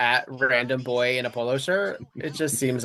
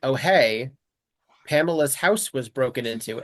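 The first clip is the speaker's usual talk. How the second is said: put-on casual, offhand tone. Retelling how a brother reports a break-in: imitating a casual remark. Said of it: "he says it so casually".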